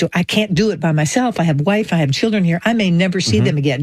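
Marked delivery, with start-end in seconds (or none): none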